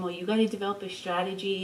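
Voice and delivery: soft, hushed half-whisper, said aside. Retelling what was said to the kids back there: retelling a half-whisper. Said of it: "I'm whispering to them".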